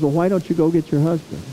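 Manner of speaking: usual speaking voice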